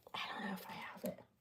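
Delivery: very hushed, barely voiced whisper. Speaker describing a bracelet, unsure whether they have their scale: whispering. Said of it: "I'm whispering that".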